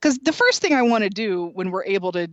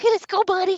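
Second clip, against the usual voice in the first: very high, cooing pet-talk voice; 13 semitones higher than usual. The speaker shows how they talk while picking him up, in their voice for talking to cats. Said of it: "I sound like I'm talking to the cats".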